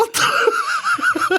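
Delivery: very high, shocked, startled yelp.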